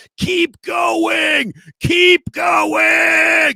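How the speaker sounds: very high, very slow, raspy, loud, drawn-out yell. Retelling a coach yelling at a player during drills: imitating Chris Kocurek yelling. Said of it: "yelling at him, like, that loud".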